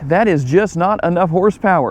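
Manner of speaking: ordinary talk, nothing marked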